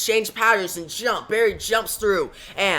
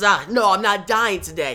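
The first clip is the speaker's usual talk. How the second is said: plain reading voice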